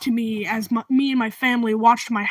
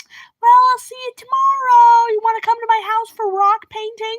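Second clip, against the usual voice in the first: put-on very high, loud grandmother voice; 12 semitones higher, 5 dB louder than usual. Retelling how the grandmother walked away after the house fire: imitating Grandma Joy. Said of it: "she just walks away like".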